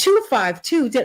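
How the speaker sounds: cheerful smiling voice. Coaching how to give a number, happy, smile in the voice. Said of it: "keep the smile in your voice ... you're happy to give the number ... do it like that".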